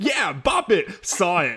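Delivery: over-the-top, extreme street voice, slow. Showing how the toy's announcer should say the line: super street extreme voice. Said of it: "super street, like, extreme voice".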